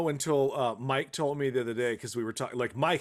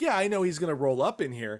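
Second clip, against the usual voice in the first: ordinary talk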